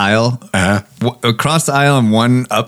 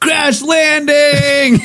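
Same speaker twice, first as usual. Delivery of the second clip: shrill, high-pitched shouted yell. Recounting the son calling out just before the plane's wheels touch down, retelling a yell. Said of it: "he yells out".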